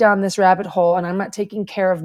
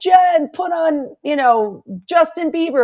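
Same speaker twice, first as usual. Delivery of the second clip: high yell, projected across a distance; 9 semitones higher than usual. Recalling a once-withdrawn person in their class calling to jen, retelling a yell across the room. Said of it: "like yelling across the room".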